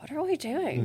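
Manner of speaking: high, hushed half-whisper under the breath. Retelling what she half-whispered to her co-chair after being named: retold half-whisper. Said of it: "I'm like whispering to her".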